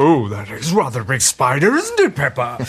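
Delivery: low cartoon dad voice, swooping up and down. Retelling a man's impression done for the Peppa Pig girl: Daddy Pig impression. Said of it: "his impression of Daddy Pig".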